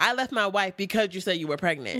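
plain

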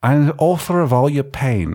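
Australian accent throughout the line. Trying the line again in a new voice, an accent heard as Australian. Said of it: "Are you Australian?".

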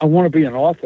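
put-on timid, bashful whisper. Retelling answering a question about dreams: imitating a timid whisper. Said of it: "'cause I kinda whispered".

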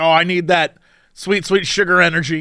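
ordinary talk

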